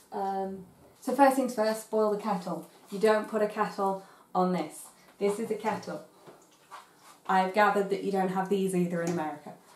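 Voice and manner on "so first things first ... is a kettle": normal talking voice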